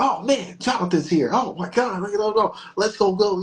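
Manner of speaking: put-on high, overexcited, gushing child's voice. Retelling a child's words as someone walks through the door: imitating an excited child. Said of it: "the child was too excited".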